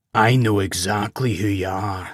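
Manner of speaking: deep, guttural but refined creature voice. Narrating a creature's sudden reply to Gawain's introduction, deep guttural creature voice. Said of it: "It was a deep, guttural voice, but refined".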